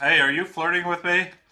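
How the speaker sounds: very loud shout. Narrating a scene, the speaker voices a woman calling out to a man; shouting. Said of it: "She shouts".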